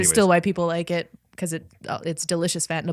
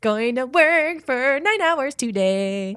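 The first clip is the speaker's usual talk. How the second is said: fun, cheerful, jaunty, bouncy rhythm; 6 semitones higher than usual. Showing how a terrible chore still sounds happy: fun jaunty rhythm. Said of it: "a fun, jaunty rhythm to them".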